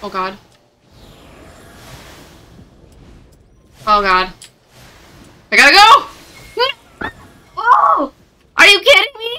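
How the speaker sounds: high-pitched yelling. A streamer reacting during play, screaming. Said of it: "Sorry for screaming".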